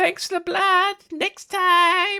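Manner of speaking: very high, loud, slow, shrill, drawn-out bat screech. Voicing a vampire flying off after biting: bat voice. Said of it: "in a bit of a bat voice".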